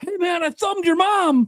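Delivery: very high, taunting, heckling shout. Imitating a fan heckling a player from the stands: imitating a fan yelling. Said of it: "some fan is in the stands and be like".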